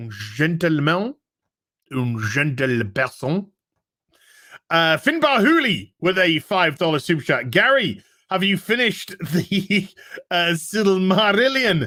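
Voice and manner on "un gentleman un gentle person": put-on French accent, much lower. Reading super chats on a livestream, saying a word in a put-on French accent. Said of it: "as would say it in a French accent".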